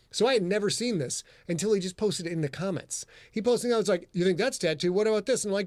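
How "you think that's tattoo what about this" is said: plain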